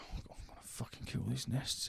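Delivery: hushed, breathy, whispered moan. Imitating the game's character sniffing out nests: imitating moaning game character. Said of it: "It's funny when you do it".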